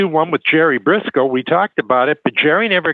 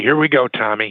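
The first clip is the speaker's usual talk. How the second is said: whispered, with a lower pitch; 4 semitones lower than usual. Retelling what someone said to them during a match: imitating a whisper. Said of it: "one of 'em whispered to me".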